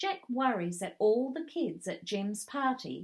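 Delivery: plain reading voice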